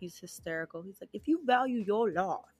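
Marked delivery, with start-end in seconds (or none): 1.1-2.4 clumsy, badly faked put-on Australian accent. Quoting an Australian TikToker's line in a terrible Australian accent as [name]. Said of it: "Terrible Australian accent".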